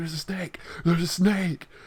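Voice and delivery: mock frightened, panicked, urgent alarmed cry. Retelling running upstairs to warn mom about a snake, retelling panicked screaming. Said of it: "I'm already screaming at my mom".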